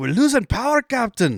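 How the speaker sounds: put-on high, swooping, sing-song Scottish accent. Retelling a ship engineer's line about the engines: scottish accent. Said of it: "The Scottish dude is like".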